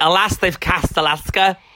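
put-on slow, drawn-out Liverpool accent. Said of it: "now you sound like you're from Liverpool".

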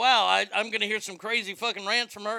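ordinary delivery

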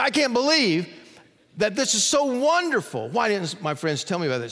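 voice catching with emotion. Quoting a man from a story that always chokes the speaker up, choked up. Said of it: "Story always chokes me up".

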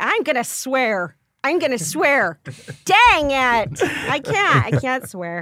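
high, sweet, overly polite, gentle fretting tone. Imitating polite Minnesotans who try to swear: imitating polite Minnesotans complaining. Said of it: "'Cause they're so lovely".

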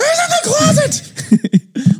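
loud, very high, very slow, drawn-out guttural angry yell. Retelling their dad's answer to a question, imitating a loud angry yell. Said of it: "just as loud and just the most guttural, angry".

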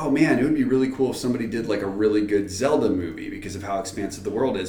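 usual speaking voice

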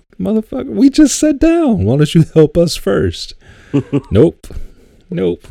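very high, indignant squealing outburst. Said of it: "And I'm like".

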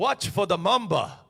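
put-on careful, French-tinged accented voice. Retelling a hunting tracker's warnings: William's French-sounding accent. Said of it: "he had that French-sounding accent".

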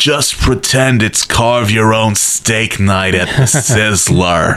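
put-on Australian-accented speech. Quoting a man's line that you remember to this day, in an Outback Steakhouse commercial voice. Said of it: "It sounds like you're doing an Outback Steakhouse commercial".

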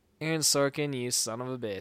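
ordinary talk

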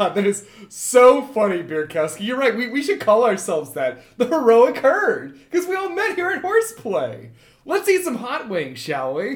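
loud, high, shaking with laughter while talking. Acting out a man turning around to praise Bierkowski's joke; imitating him laughing while talking. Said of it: "he's like sort of shaking with laughter".

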